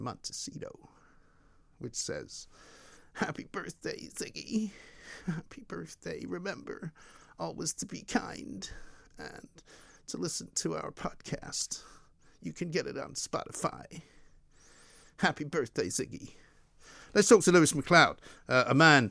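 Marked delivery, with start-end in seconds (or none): 3.1-16.3 soft, breathy, barely voiced delivery. Reading a birthday message to a dog as Meghan Markle. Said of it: "Meghan Markle wishing your dog a happy birthday".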